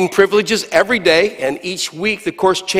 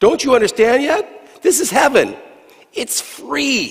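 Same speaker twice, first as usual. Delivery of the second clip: a touch of exasperation, pitched up; 6 semitones higher than usual. Peter answers the man's repeated question, somewhat exasperated. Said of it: "Peter replied with some now aspiration".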